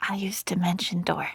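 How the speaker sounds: hushed whisper in a character voice. Voicing a character who whispers to the player's character: whispering in character. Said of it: "whispers to you".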